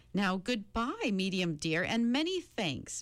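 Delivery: plain reading voice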